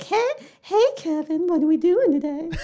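put-on ten-year-old voice, high and slow. Acting out a friend in a movie plot pitch: put-on ten-year-old voice. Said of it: "the gayest ten-year-old voice".

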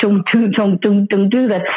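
usual speaking voice

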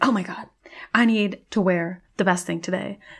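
excited, thrilled. Playing a wood elf choosing clothes at the closet: excited. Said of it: "I'm so freaking excited".

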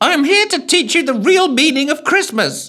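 overblown, booming, very high-pitched, far too loud. A narrator reads the apparition's announcement, in an unnecessarily loud tone. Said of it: "in an unnecessarily loud tone".

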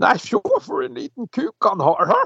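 put-on shrieking, northern Norwegian dialect. Speaker retelling two women calling out from the stage edge, imitating women shrieking in northern norwegian. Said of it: "to kvinnestemmer som hyler og skriker på nordnorsk".

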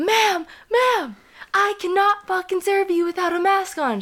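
mock shrill, freaked-out, high-pitched screaming shriek. Telling a story from a busy grocery store, retelling the cashier's scream. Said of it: "the fucking cashier lady screams".

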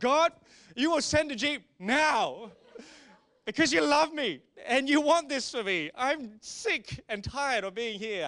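very loud, forceful, commanding delivery. Retelling a prayer for a Jeep in the jungle rain: imitating a forceful declaration prayer. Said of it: "I started to go into declaration mode".

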